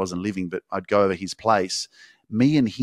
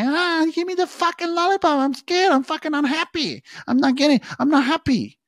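put-on very high, screaming child's tantrum. Describing a five-year-old's tantrum over a lollipop, imitating a screaming child. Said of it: "The kid goes onto the floor and starts fucking screaming".

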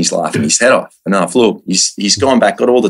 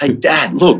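play-acted sudden yell, raised and pitched-up; 6 semitones higher than usual. Retelling spotting a crocodile while diving, calling out to Dad: retelling a yell. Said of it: "I yelled out".

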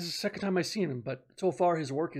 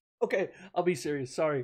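plain

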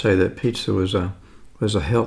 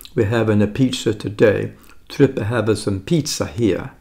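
deliberately bad put-on Italian accent. Showing off a pepperoni pizza, bad Italian accent. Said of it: "I'm going to do my bad Italian accent".

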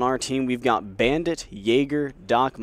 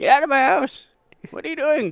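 put-on very high, cranky, loud old-man voice outburst; 13 semitones higher than usual. Commentating a game, voicing a player imagined as an old man with a cane. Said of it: "imagining him like an old man with a cane".

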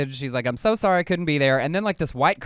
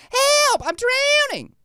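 very high-pitched, shrill yell; 5 dB louder than usual. Joking about calling for rescue while drowning: yelled in a very high voice. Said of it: "You just have to yell it in a real high voice".

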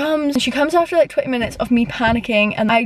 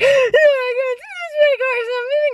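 mock very high, sobbing, bawling wail; 13 semitones higher than usual. Speaker reenacts the moment the car got stuck in the ditch, retelling own bawling. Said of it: "I start bawling my eyes out".

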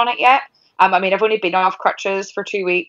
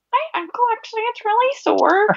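play-acted, very high, bratty whine. Recalling a broken ankle after a match, quoting past complaint: retelling own whining. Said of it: "I just kept whining".

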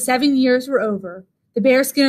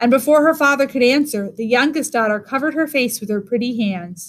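plain

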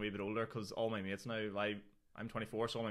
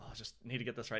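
put-on nervous, rattly man's voice, much quieter; 4 dB quieter than usual. Retelling a stand-up night, imitating a nervous, rattly man. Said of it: "Kieran's nervous and rattly sort of stuff".

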